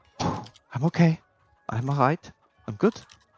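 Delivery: exhaled, self-steadying, reassuring sigh. Voicing a character who swallows after covering his mouth: swallowing then sighing.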